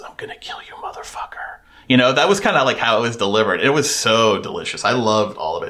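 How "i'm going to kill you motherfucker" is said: put-on sweet whisper, much quieter. Retelling how a line was delivered, as if to a dying grandpa: sweet whisper. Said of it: "whispering to your grandfather in really sweet tones".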